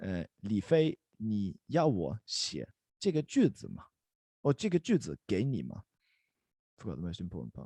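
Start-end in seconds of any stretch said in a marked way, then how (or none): 0.0-3.9 slow, careful, unhurried speech. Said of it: "Let's say that slowly together".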